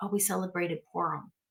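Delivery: gently hushed, soft, quiet murmur. Retelling what a woman said when asked about the festival, quoting her soft quiet voice. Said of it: "she quietly spoke softly and said".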